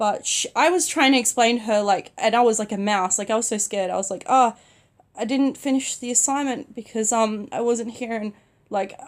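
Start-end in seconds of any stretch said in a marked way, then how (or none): none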